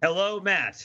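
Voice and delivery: passive-aggressive delivery. Greeting the host: passive-aggressive tone. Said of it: "so much passive aggression in your voice".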